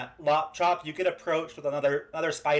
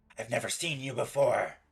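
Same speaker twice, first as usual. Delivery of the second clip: spider creature voice, much lower; 3 semitones lower, 4 dB quieter than usual. Spider character meeting a newcomer, in its spider voice. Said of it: "in its spider voice".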